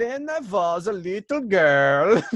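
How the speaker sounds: put-on loud, thick Norwegian accent, "girl" stretched. Recalling a scene you watched as a kid, do Billy Crystal's over-the-top Norwegian accent. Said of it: "doing like a Norwegian accent".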